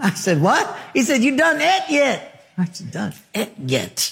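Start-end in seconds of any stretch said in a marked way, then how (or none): 1.2-2.5 put-on thick, drawn-out, pitched-up country accent. Speaker quotes a ranch cook's question, in a redneck country accent. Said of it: "they talk with an accent like this".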